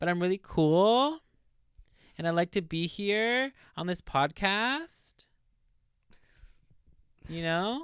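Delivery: put-on uptalk, every phrase rising at the end. Playing an annoying podcast guest: put-on uptalk, rising inflection. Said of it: "talk with a high inflection at the end".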